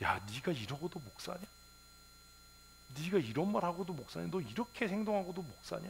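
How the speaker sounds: high, rising, self-rebuking scolding tone.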